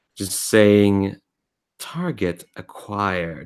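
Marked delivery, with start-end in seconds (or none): 1.8-3.5 gentle, mannered synthetic female voice. Describing a voice piped into your head as a skiff hovers, Cortana-based mannered female voice. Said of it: "this m- mannered female voice all piped into your head".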